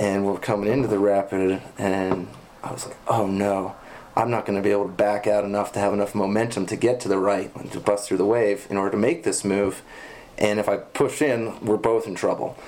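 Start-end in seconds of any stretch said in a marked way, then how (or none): none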